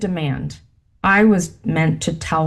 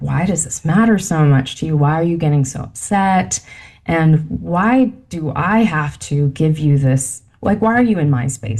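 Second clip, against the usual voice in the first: normal talking voice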